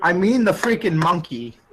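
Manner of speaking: usual speaking voice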